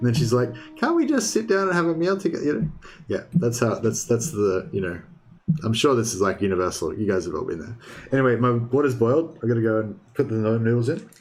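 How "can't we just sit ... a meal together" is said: put-on annoying, high-pitched nagging voice. Imitating a wife asking for a proper meal together: fake annoying wife voice. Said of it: "fake annoying wife voice that you do".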